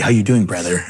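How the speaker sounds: play-acted, cocky, arrogant, swaggering know-it-all voice. Retelling how an arrogant guy greeted him: imitating a cocky greeting.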